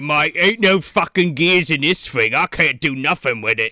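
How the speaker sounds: London Cockney speech, put on. Picturing a blunt reaction to the gearless device, in a cockney accent. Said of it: "Cockney accent in the middle of Geneva".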